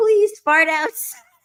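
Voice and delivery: very high, loud, begging pleading. Retelling what an ex-boyfriend said in bed: imitating a pleading ex-boyfriend. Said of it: "he was pleading with me".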